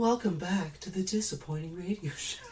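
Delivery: fake, seductive, sexy radio host voice, put on. Opening the radio show with a welcome line: put-on sexy voice. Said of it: "I thought I'd try to do a sexy voice".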